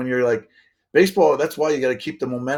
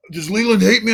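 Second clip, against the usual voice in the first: hammed-up, hyped wrestler-style voice, pitched higher; 8 semitones higher, 4 dB louder than usual. Retelling what a traded teammate said, imitating Sean Casey like a WWF wrestler. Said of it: "you know how he talks like a W W F wrestler".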